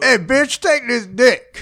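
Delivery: very slow swagger, every word drawn out. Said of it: "That's [name]".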